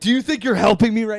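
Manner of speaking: acted-out upset voice. Retelling a bathroom confrontation, the speaker quotes their past self questioning someone: retelling getting upset. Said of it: "I'm getting like upset".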